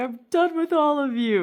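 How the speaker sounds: exasperated loud yell.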